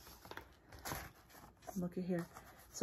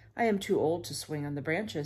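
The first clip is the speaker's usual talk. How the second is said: ordinary delivery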